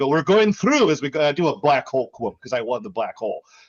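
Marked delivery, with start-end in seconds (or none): 0.1-0.9 put-on, pitched-up Eastern European accent. Retelling a game night, going through a portal, in an Eastern European accent. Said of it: "I do my my Eastern European ac- accent".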